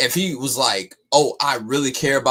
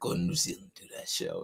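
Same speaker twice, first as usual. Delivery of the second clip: breathy, very hushed whisper; 14 dB quieter than usual. Retelling how another speaker slipped in a line: imitating someone whispering. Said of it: "He tried to whisper that, like".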